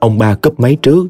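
ordinary delivery

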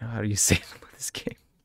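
fast, low-pitched whisper.

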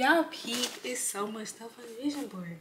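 very quiet half-whisper under the breath. Showing your vision board to the people you're addressing, half-whispering. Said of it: "Why am I whispering?".

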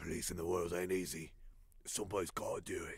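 low, quiet mock soldier voice. Reacting to a video, repeat the man's try at a Captain Price impression. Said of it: "What was that voice? Is that him trying to like be like friggin' Captain Price?".

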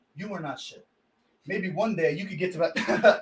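very quiet, calm, even, unraised level talk. Retelling how a man spoke to his rival: imitating a calm, unraised voice. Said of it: "He talked to him like this".

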